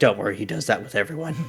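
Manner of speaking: whispered character voice. Voicing Stig reassuring Sonia about the other character: whispering as Stig. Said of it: "whisper to Sonia".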